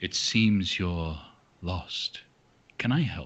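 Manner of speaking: low, soothing, charming, charismatic, comforting voice. A narrator voices a voice on the wind greeting the players entering the city, soothing charismatic voice. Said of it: "almost a soothing voice".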